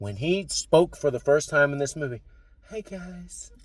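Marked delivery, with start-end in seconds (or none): 2.7-3.5 very quiet, hushed voice. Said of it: "is he gonna talk like [name]?".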